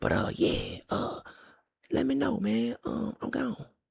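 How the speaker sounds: very slow, drawn-out, high whisper. Signing off while a wife sleeps nearby: whispering. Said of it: "so I'm whispering right now".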